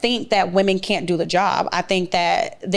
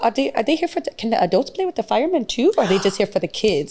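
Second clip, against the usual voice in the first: put-on strong Spanish accent; 3 semitones higher than usual. Acting out a woman asking about the firemen, in a Sofia Vergara voice. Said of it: "She talks like her".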